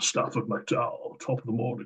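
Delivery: soft, posh, well-to-do Scottish accent. Commentator imagining a player with a well-to-do name introducing himself, posh Scottish accent. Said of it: "Posh Scottish accent".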